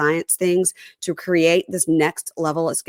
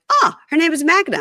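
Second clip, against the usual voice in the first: high, loud, joking mock announcer voice. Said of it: "John and Patrick were like".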